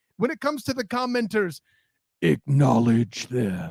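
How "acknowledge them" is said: animated, swooping character voice-acting attempt. Offering to perform it instead of playing the clip, attempting voice acting. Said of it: "let me try my voice acting".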